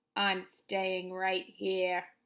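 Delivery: grousing, refusing grumble. Reading a story aloud, voicing the Rat's reply, grumbling. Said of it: "grumbled the Rat".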